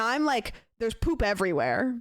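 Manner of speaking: ordinary talk, nothing marked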